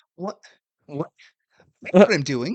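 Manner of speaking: slightly high guard voice. Retelling a game scene, voicing the guard in a high-pitched voice. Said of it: "it's it's a little high pitched".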